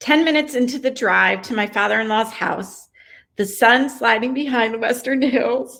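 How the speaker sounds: reading aloud, on the verge of crying. Reading aloud a passage from chapter one, on the verge of crying. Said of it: "I'm going to cry now".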